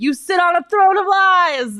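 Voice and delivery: high-pitched, loud yell.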